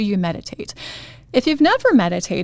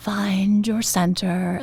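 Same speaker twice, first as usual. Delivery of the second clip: creepy, shushy, half-whispered guided-meditation voice; 4 dB quieter than usual. Mocking the guided meditation voice she can't handle, in a creepy half-whispery meditation voice. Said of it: "that whispery voice that says".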